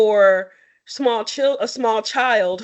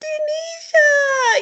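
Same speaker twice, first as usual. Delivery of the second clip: put-on tiny, very high, squeaky child voice. Recalling how a child at school would call out to her: little squeaky voice. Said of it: "she would be in her little squeaky voice".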